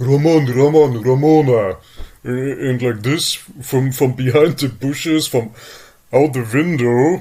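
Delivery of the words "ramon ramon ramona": mock tough-guy yelling, louder. Retelling how people yelled from behind the bushes: imitating tough guys yelling. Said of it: "they're yelling like, like Mister Tough Guys".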